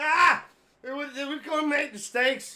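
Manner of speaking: put-on drunk voice. Retelling answering a phone call on game day, imitating sounding drunk. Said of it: "You sound drunk".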